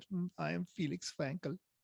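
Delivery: light put-on German accent. Explaining the rotary engine's German inventor, speaking as him: Felix Wankel German accent. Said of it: "kind of say it was a German accent".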